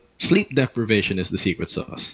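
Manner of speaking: ordinary delivery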